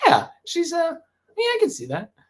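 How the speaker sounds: very high put-on approving voice. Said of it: "who you're not like".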